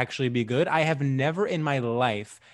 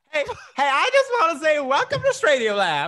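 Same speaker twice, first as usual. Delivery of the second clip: very high, sing-song Southern lady accent; 5 dB louder than usual. Opening the podcast, a host welcomes listeners: put-on southern lady accent. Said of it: "You were just being sort of a Southern lady".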